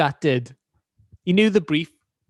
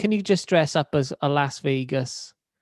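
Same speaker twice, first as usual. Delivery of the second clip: normal talking voice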